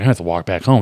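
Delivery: ordinary delivery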